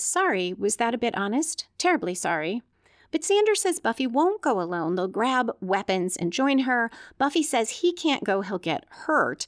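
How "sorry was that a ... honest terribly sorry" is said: normal talking voice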